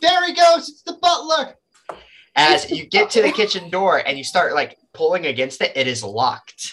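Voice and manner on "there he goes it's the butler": very high, excited crowd-like shouting. Narrator voices the crowd as you run for the kitchen door, crowd shouting. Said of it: "they start shouting".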